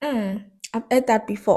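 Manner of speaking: plain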